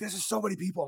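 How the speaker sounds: put-on, high, overwhelmed, frantic alarm. Retelling a sister's words in a big crowd: imitating sister freaking out. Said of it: "my sister was, like, freaking out".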